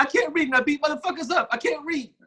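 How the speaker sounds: squeaky, very high voice with a lisp. Showing the voice whose high pitch and lisp are being discussed, in a high-pitched lisping voice. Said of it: "Yeah, exactly. You get it".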